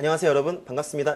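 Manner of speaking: very fast, like sped-up playback. Demonstrating how an online lecture sounds at 1.6x speed, sped-up playback speed. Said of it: "일 점 육 배속으로 보시면 네, ... 이 정도의 속도로 나와요".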